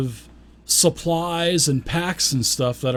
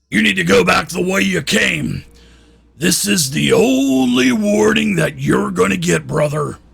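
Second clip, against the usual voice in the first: harsh, creaky, rough, raised dwarf voice; 5 semitones higher, 6 dB louder than usual. Reading a story, one of three dark dwarves who just stood up speaks: harsh voice. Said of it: "a harsh voice says".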